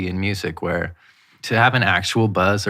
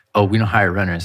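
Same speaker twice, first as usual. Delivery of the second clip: ordinary talk, nothing marked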